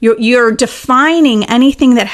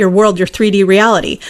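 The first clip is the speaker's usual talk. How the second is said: normal talking voice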